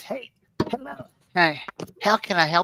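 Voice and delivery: high cartoon-like character voice. Reading a viewer's comment aloud, trying an Eric Cartman voice. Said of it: "trying to remember how the Cartman voice".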